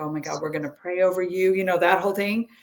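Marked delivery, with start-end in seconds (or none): 0.0-1.5 dead-serious, solemn chaplain-like tone. Retelling how the chaplain came in to pray: imitating someone all serious. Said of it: "all serious".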